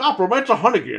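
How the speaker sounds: put-on Boston accent. Imitating a game character's line: imitating a boston accent. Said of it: "he sounds like from Boston when he says".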